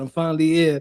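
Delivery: ordinary delivery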